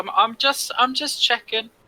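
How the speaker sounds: loud, high shouting. Shouting back in character to a party member: in-character shout. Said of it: "I'll shout back just like".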